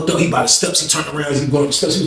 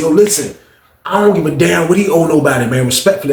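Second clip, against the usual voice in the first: ordinary delivery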